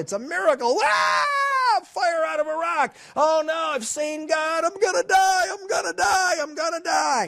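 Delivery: yelled in high, terrified panic. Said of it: "Gideon freaks out".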